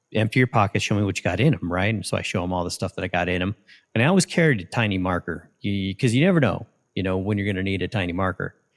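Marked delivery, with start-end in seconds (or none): none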